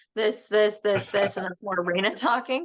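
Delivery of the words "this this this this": put-on robot voice, slower, word by word. Showing how she speaks when channeling, [name]'s robot voice. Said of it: "I call it the robot voice".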